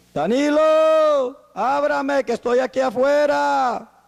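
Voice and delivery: very high, very slow, drawn-out yell. Acting out the Lord calling at the door: mock shouting. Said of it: "¿Será que el Señor empieza a gritar?".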